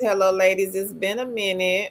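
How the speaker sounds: usual speaking voice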